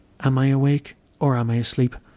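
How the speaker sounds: ordinary talk, nothing marked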